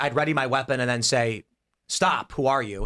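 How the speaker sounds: ordinary delivery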